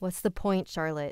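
usual speaking voice

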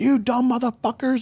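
very high-pitched, piercing, acted screaming. Recalling a man screaming at the class; retelling someone screaming. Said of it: "screaming at us".

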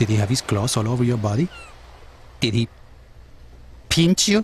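agitated, worked-up, accusing, high swooping voice. Pressing the other person with questions until told not to get excited; excited. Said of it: "don't get excited".

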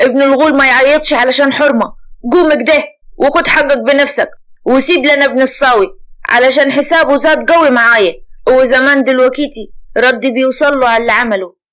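loud, angry, scolding tone. A father steps up to his son and speaks to him angrily. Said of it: "وتحدث بعصبية".

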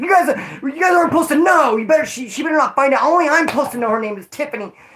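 worked-up angry outburst. Retelling how a guy got mad that others learned a name: imitating someone getting mad. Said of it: "He got all mad".

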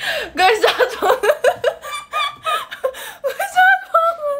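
high, laughing, mock hurt objecting tone.

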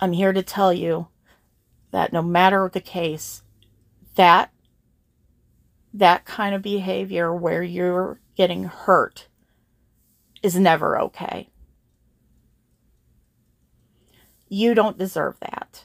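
voice straining to hold back tears. Speaking to viewers who have been hurt, telling them they deserve better: holding back tears. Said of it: "I'm trying very hard not to cry".

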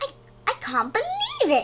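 gasped out. Wolf opens his box and finds a gas mask inside; gasping. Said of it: "he gasped".

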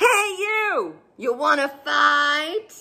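slow, screechy, bad-tempered, grumpy ladybird voice. Narrator reads the ladybird challenging a praying mantis, screeching bad-tempered ladybird. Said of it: "a bad-tempered ladybird flew in from the right. ... screeched the bad-tempered ladybird".

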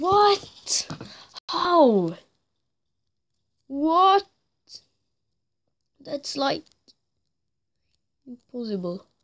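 furious, high, loud can't-believe-it outburst. Streaming a game, reacting to an opponent's play, in angry disbelief. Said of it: "I'm just so angry right now".

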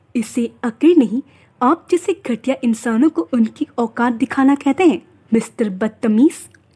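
usual speaking voice

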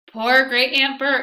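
high, loud, patronizing, condescending tone. An officer, hand on the casket, speaks to her in a condescending tone. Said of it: "he said in a condescending tone".

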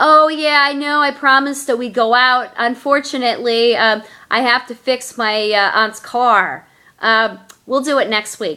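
ordinary talk, nothing marked

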